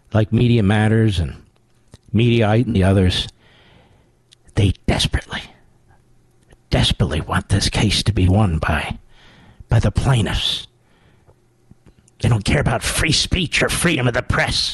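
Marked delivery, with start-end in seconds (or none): 4.5-14.7 put-on politician-style whisper. Talking about the enemy media hanging on your every syllable, whispering like Biden. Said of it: "I'm whispering like Biden does".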